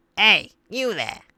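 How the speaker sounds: grumpier character voice. Trying out voices for a character's line, a bit crankier voice. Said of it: "maybe a little bit crankier".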